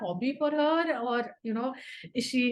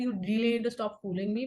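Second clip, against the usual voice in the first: ordinary talk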